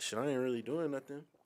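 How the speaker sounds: usual speaking voice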